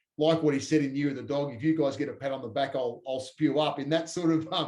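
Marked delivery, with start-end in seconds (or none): none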